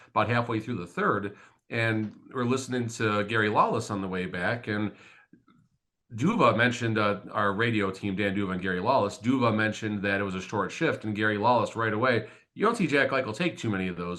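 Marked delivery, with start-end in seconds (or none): 12.6-14.2 very heavy sarcasm with swooping pitch. Retelling a radio announcer's remark about a short shift: imitating a very sarcastic remark. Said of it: "in a very sarcastic manner".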